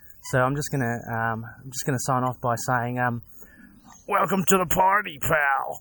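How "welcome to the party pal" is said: put-on action-movie American accent, pitched higher. Signing off with a closing line: movie-style American accent. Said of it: "another attempt at some American accents".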